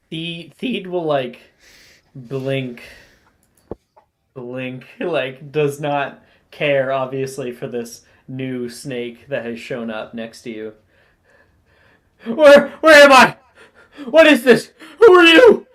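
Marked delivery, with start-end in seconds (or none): 12.2-15.5 very high, very loud, shrill panicked cries. Voicing a newly arrived snake that is freaking out: panicked snake character. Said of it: "He's freaking out".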